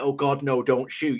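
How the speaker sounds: mild, scared, frightened crying out. Speaker retells cafe customers reacting to a pistol, imitating people screaming. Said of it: "Everybody in the cafe started screaming like".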